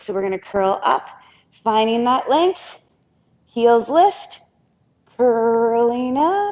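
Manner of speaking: voice with a slight tremble, a little shake. Talking listeners through a curl-up exercise, with a little shake in voice. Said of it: "You can hear the little shake in my voice".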